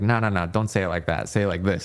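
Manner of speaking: ordinary talk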